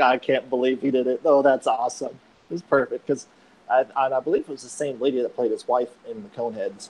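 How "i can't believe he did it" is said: ordinary talk, nothing marked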